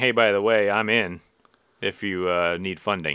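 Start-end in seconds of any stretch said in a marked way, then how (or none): none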